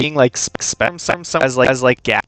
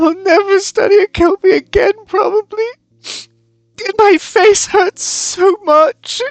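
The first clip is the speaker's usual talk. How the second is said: very high, slow, tearful crying through words; 4 dB louder than usual. Voicing a character who is crying into another's shoulder: crying while talking. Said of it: "crying into your shoulder".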